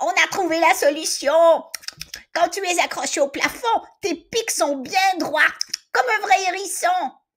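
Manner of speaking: delighted, joyful yell, very high-pitched. Reading a children's story, a character finds the solution: yelling with joy. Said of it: "Paulin hurle de joie".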